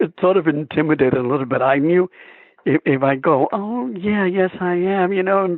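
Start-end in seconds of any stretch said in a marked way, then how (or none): 3.5-5.1 mock meek voice, very slow, soft and high. Showing how a soft answer to the driver would sound: imitating a soft meek reply. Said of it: "play it like Hector normally would".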